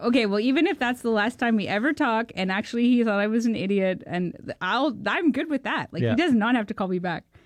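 ordinary delivery

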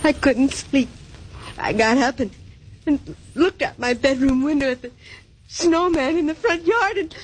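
tearful voice. In a drama, a character answers Mallory asking why she is crying, crying. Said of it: "Why are you crying?".

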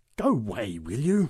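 low, growling, dismissive growl. Reading a story, a big woman moves toward a one-armed man: growling. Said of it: "Growled the big woman".

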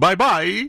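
high, slow mock Chinese accent.

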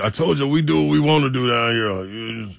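put-on generic Cajun accent, Louisiana style. Voicing LSU during a sports discussion, in a generic Cajun accent. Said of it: "that's a generic Cajun right there".

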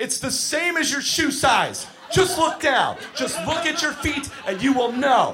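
grown man voice, losing control in rage.

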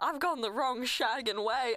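muttered quietly under the breath. Quoting a line from the Austin Powers books: quoting Austin Powers. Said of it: "I go".

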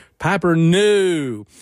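put-on Durham accent with a long, drawn-out no. Showing how people impersonate an accent: imitating Parker Posey's Durham accent. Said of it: "people impersonate Parker Posey going".

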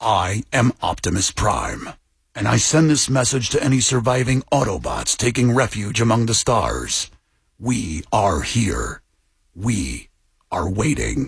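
low-pitched, slow voice.

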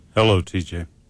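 sounds like an undertaker. Greeting another speaker from the newsroom: sounds like an undertaker. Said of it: "You sound like a freaking undertaker".

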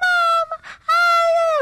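exaggerated, high, loud squealing baby talk. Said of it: "porque él no es así".

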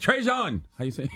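accent from Haiti. Imagining how Haitians would say a word, in a Haitian Creole accent. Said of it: "I'm trying to say treason with a Creole accent".

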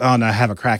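ordinary talk

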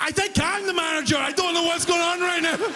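panicked, confused delivery.

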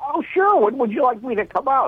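very high, anxious, eager new-salesman voice. Retelling a talk with a new salesman, voicing his reply; imitating an anxious salesman. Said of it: "He's all anxious".

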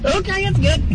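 cartoon hillbilly voice, very high. Imitating the startled deputy from the dash cam: imitating the deputy's cartoon hillbilly voice. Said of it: "cartoon hillbilly".

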